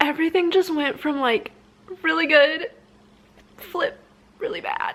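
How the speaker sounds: about to cry, tearful voice. Speechless and stressed, talking through the moment, on the verge of tears. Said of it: "I'm gonna cry".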